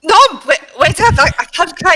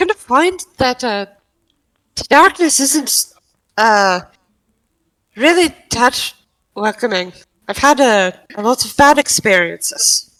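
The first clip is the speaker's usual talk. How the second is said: put-on Irish accent; 5 semitones lower than usual. In a role-play, getting back into character after drifting accents, Irish accent. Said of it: "Trying to get my Irish accent back".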